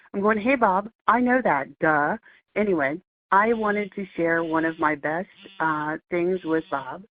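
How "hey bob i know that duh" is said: loud yelled screaming. Retelling talking back to the computer when aggravated; retelling own screaming. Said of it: "I'm screaming at the radio going".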